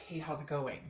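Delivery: put-on emotionless flat tone. Imagining how the other person might greet the listener: imitating someone with no emotion. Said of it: "But with no emotion".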